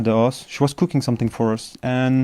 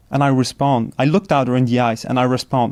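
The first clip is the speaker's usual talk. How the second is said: ordinary talk, nothing marked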